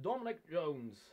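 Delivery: put-on English accent. Naming someone in a shout-out to an Englishman: put-on English accent. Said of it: "That was an English accent".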